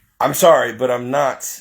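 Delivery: ordinary talk, nothing marked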